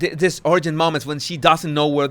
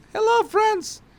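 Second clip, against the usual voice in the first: very high, squeaky cartoon voice. Mocking Harry's imagined TED Talk, Harry waves to imaginary friends in a Mickey Mouse voice. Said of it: "my Mickey Mouse voice".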